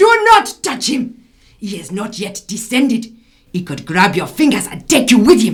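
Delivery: booming, very loud put-on Nigerian accent. In a scene about a dead man, a character speaks in a Nigerian accent. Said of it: "You might want to look at a Nigerian accent".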